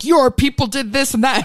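put-on yelling robot voice. Retelling how a robot leader yells at a man: imitating Optimus Prime yelling. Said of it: "he keeps yelling at Mark Wahlberg".

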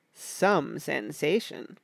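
smiling, jovial, genially condescending tone. A man adds a remark to his listeners, with jovial condescension. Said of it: "He smiled with jovial condescension and added".

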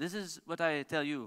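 slow, slight put-on French accent. Quoting a nine-time world rally champion's advice to the speaker, in a French accent. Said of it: "in his wee French accent".

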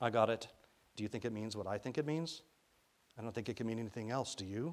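ordinary delivery

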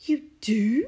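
loud, eager exclamation. A woman answers a man's offer of help, crying out. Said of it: "She cried".

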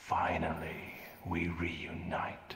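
screeching hiss in a demon voice. Narrating a story, voicing the demon as the man succumbs to darkness, in a screeching hiss. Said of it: "the demon says in a screeching hiss".

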